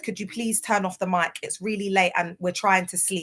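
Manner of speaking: usual speaking voice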